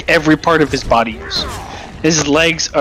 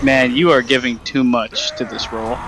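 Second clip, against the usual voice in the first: plain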